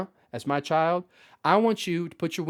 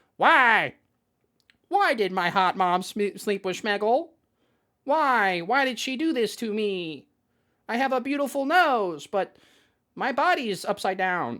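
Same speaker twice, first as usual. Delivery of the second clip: put-on crying like a baby; 5 semitones higher than usual. Retelling how Shmeegle Fox, crying in the speaker's arms, talked: crying baby voice. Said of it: "he's talking to me as a baby".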